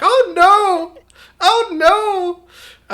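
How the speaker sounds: put-on heavy Flemish accent, very high and very slow. Speaker imagines their mother's reaction to the video, imitating Mom's thick Flemish accent. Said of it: "in her very thick Flemish accent".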